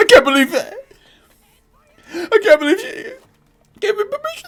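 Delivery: crying, sobbing voice, pitched way up. Imagining a character's reaction after being refused: mock crying. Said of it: "He's gonna cry".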